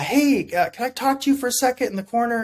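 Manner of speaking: whispered. Retelling asking the sergeant for a word in the corner: imitating own past whisper. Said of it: "trying to whisper to the sergeant".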